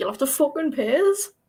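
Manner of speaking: cursing in bad, terrible British slang. Asked to curse at the others in their worst British slang, the speaker obliges. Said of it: "curse at us in your worst British slang".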